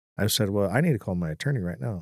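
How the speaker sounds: normal talking voice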